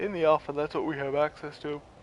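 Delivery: words bent and stretched by talking through a yawn. Explaining the alpha to the guys early in the morning, yawning while talking. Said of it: "sorry for yawning".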